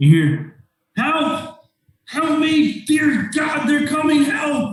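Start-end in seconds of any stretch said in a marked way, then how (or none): 1.0-4.7 very high, drawn-out, crying-out shouts. Narrator voices someone around the corner from the house; shouting for help. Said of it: "you can hear shouting".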